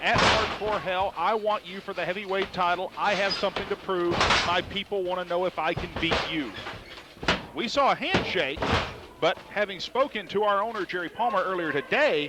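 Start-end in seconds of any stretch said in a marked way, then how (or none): none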